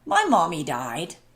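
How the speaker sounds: put-on small young boy's voice. Relaying a voice the speaker heard in their head from an owner's animal; little boy voice. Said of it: "it was like a little boy voice".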